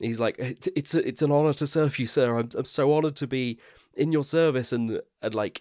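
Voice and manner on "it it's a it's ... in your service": high, excited, starstruck stammering gush. Retelling Creel meeting Palpatine: imitating excited Creel. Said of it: "He's so excited".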